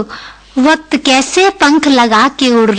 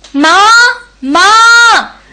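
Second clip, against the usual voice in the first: high, thrilled, excited shout; 8 semitones higher, 4 dB louder than usual. A daughter calls out to her mother, shouting excitedly. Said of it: "इतना क्यों चिल्ला रही है?".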